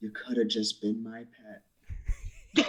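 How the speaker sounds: hushed, slow, soft, drawn-out half-whisper. Half-whispering to a dying wolf in character: half-whisper. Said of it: "I'm also gonna whisper to the".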